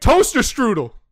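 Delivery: loud, high yell. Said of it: "And you just yelled out".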